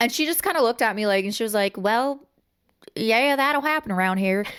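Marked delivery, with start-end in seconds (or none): 1.8-4.4 Southern Tennessee drawl. Retelling the waitress's reply to your near-miss story, in a tennessee accent. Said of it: "I love the Tennessee accent".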